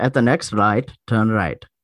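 imitated Indian accent. Imitating the older man whose voice gives them directions, Indian accent. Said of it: "He's like the Indian voice".

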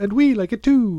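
high, loud, fake Irish lilt.

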